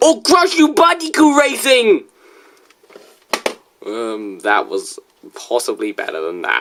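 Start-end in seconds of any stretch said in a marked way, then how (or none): 0.3-2.0 put-on Japanese accent, very high-pitched. Discussing a racing game's Japanese title, a speaker says it in a fake Japanese accent. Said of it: "trying to speak in a Japanese accent".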